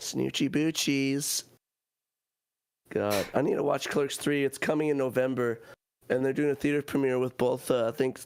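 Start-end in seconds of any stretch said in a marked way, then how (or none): 0.0-1.4 put-on stoner voice. Doing a requested Jay impression from Jay and Silent Bob. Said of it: "he can do a really good Jay impression".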